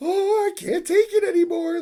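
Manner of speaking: very high, loud voice cracking into a breakdown. Retelling Baki's breakdown over a fight, imitating Baki's voice cracking. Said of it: "His voice is cracking".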